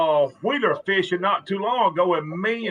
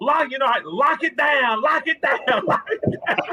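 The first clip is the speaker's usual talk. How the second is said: play-acted, high-pitched hollering across a distance; 7 semitones higher than usual. Retelling hollering at a fishing partner while the clicker runs: retelling hollering at a friend. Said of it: "I'm just hollering at him".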